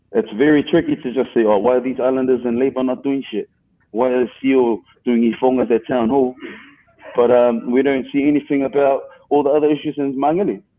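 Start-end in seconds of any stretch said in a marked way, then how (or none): none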